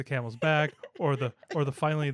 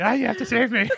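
put-on cartoon boy voice, much higher and louder; 10 semitones higher, 8 dB louder than usual. Retelling how the speaker's wife reacted, Cartman voice. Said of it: "So my wife went full Cartman".

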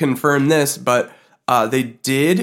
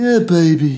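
put-on voice with a Liverpool-tinged accent; 3 semitones higher, 3 dB louder than usual. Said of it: "That was [name]".

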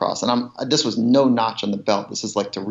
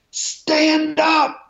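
put-on shrill, very high, full-lung, top-of-lungs scream; 3 dB louder than usual. Retelling a man in a trail boat screaming at him, retelling a top-of-lungs scream. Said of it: "he screams at the top of his lungs".

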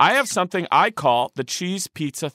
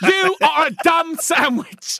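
put-on angry chef voice, higher pitched; 13 semitones higher, 4 dB louder than usual. Retelling a comedian's bit, doing a Gordon Ramsay impression. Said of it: "Joe DeRosa has a bit about that Gordon Ramsay".

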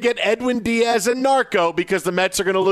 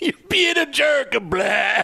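bad, pitched-up vampire voice; 6 semitones higher than usual. Repeating the other speaker's line back, mockingly: bad vampire voice. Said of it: "sounded like a really bad audition to be a vampire".

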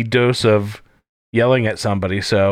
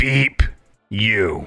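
gritty, rough, gravelly, rasping voice. Introduced as the host's sidekick, a character answers, gravelly. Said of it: "It was so gravelly".

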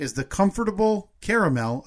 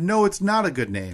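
normal talking voice

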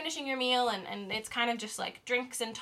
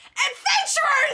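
put-on excited, shrill, very high little boy yelling; 8 dB louder than usual. Voicing a small boy who spots the adventurers: child screaming. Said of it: "he screams and says".

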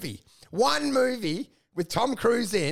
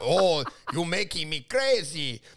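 put-on Russian accent, low pitched; 6 semitones lower than usual. Speaker on stage quoting a Russian guy: Russian accent. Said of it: "The Russian guy's like".

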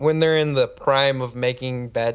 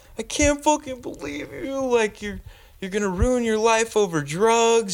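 very high, bawling, furious, crying through the anger; 10 semitones higher than usual. Retelling a mother's tearful rant about drugs: imitating mom crying angrily. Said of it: "she's just bawling, crying".

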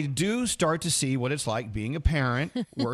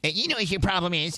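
mocking, put-on know-it-all voice; 3 semitones higher than usual. Imitating a stranger pointing out what you're doing wrong: imitating a know-it-all stranger. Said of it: "you have to do it in the voice".

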